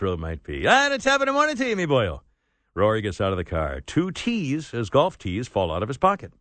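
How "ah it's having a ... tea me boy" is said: typical Irish brogue, pitched up. Narrating a gas station attendant greeting a golfer, in a typical irish accent. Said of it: "greets him in a typical Irish manner".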